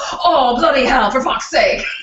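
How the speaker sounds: put-on rough, coarse English accent. Describing how a man talks, imitating him in a rough English accent. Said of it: "He's got this great English accent".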